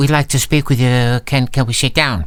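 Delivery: ordinary talk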